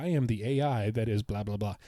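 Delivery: ordinary delivery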